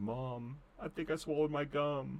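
slow, weepy, put-on tearful sobbing. Retelling going inside to mom after knocking teeth out: imitating own past crying. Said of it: "I went inside crying".

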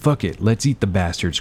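ordinary talk

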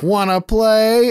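sweet, high, innocent talking-doll voice. Retelling a scene where a woman picks up the doll: innocent doll voice. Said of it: "And the innocent doll voice".

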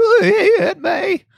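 cracking voice, very high and slow. Mocking an actor's line delivery: Tom Holland voice cracking. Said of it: "cut down on the voice cracking".

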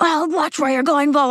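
play-acted yell, high-pitched. Retelling how a man yelled at her while she walked her dog, retelling a yell. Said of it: "And he yells at me".

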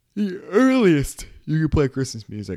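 words stretched by a yawn. Speaking to listeners, the speaker talks while struggling through a yawn. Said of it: "As I struggle through a yawn".

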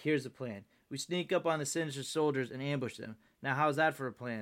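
plain

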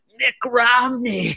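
feeble, decrepit, very high voice. Speaker imitates a man's answer when asked who he'll vote for: imitating a decrepit voice. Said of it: "he just goes in a decrepit voice".

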